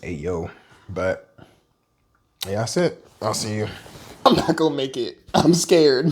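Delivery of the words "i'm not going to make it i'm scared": high, loud laughing through real fear. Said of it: "'cause I'm laughing, but I'm dead serious".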